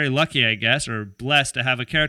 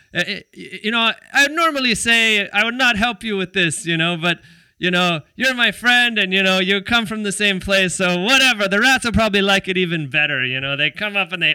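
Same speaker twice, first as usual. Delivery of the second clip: rough put-on Mexican accent, pitched up; 5 semitones higher than usual. Retelling what a friend said, in a put-on Mexican accent. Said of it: "I'm butchering the Mexican accent".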